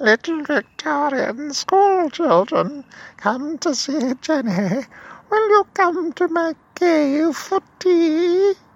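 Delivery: very high, loud, shrill hag voice, "tea" stretched. Telling of a hag creature calling to Victorian school children, grotesque hag-like Jenny voice. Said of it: "She had a grotesque hag-like voice".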